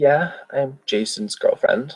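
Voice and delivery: trembling, unsteady, slightly high-pitched shaky voice. Retelling how a woman answered a man asking whether she's a mate: imitating a shaky voice. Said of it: "a bit of a shaky voice".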